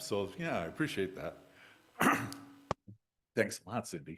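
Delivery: soft, choked-up voice, emotion catching in the throat. Thanking the audience and community before starting their story, choking up. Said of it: "Now I'm choking up again".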